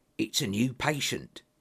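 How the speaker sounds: eager, excited whisper. A man whispers to the narrator about what is in their room; excited whisper. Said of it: "he whispered, sounding even more excited than before".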